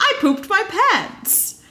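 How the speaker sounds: very high-pitched, slow, drawn-out cheerful delivery. Retelling a contestant's line from the show: imitating Eleanor cheerfully announcing. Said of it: "cheerfully announces that".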